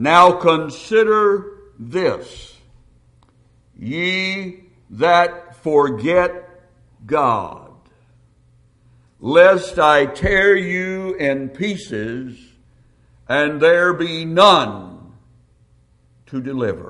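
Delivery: slow, deliberate, measured reading, "ye" drawn out. Rereading a Psalms verse aloud, slower. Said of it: "Let me read that a little slower".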